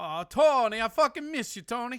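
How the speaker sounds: poor fake Italian accent. Sending a message back to tony through the phone call: weird shitty italian accent. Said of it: "he said in a weird, shitty fucking Italian accent".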